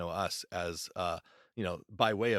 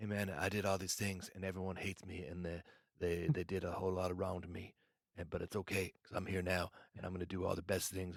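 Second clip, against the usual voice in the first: soft, non-threatening put-on voice, quieter; 6 dB quieter than usual. Retelling how a podcast guest talked, soft non-threatening tone: Nick Yaris impression. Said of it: "that's my Nick Yaris impression".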